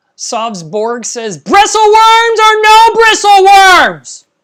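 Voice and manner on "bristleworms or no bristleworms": fake yell, much higher pitch, louder, slower. Streamer reads a viewer's chat question aloud: mock-yelling a chat question. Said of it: "sorry for yelling at you guys".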